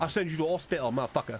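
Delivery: put-on, fake British accent. Joining in the bit, put-on uk accent. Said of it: "don't go into a U K voice?".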